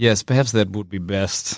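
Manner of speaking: reluctant, defeated, resigned tone. Player in character answering another's suggestion, resigned. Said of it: "a little kind of like resigned nod".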